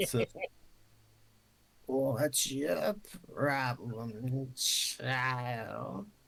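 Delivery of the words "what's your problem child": put-on crone-like old witch voice. Retelling what an old lady said to her friend, in a witch voice. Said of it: "Now she sounds like a witch".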